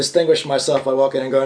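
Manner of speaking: ordinary talk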